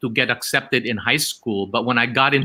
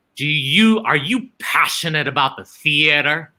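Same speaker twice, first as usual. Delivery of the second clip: mock, big, tough masculine voice; 3 semitones higher than usual. Retelling an audition and imitating the founder's question: loud voice imitating Zenaida Amador. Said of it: "with this loud voice".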